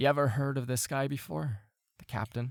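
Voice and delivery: whispering. Your cabin mate slides up and asks about the captain; whispering. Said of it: "he'll whisper over to you and say".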